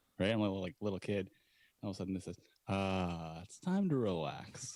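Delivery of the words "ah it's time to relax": very slow, swooping, sing-song announcer drawl. Retelling an album's spoken parody intro: impression of the intro's talking guy. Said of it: "That's a good impression".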